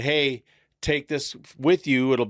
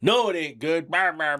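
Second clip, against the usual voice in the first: mock-angry, snapping tone; 3 semitones higher than usual. Retelling how his dad snapped at a kid, imitating dad snapping angrily. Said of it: "he just starts fucking snapping at this kid".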